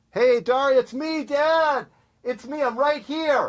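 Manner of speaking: very high, loud hollering yell. Showing his favorite move, a dad calls out to his kid from the car, yelling. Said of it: "You don't need to yell in here".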